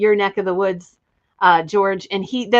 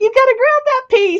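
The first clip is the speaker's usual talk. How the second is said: acted yell, higher and louder; 5 dB louder than usual. Retelling watching a video, imitating own yelling at tv. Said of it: "yelling at the T V".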